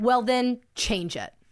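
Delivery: mock contemptuous, disgusted, curt, blunt, menacing evil tone. Recounting what happened on camera, the speaker imitates Ruby's evil, disgusted, blunt tone. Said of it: "she literally changes her tone to this evil, disgusted, blunt voice".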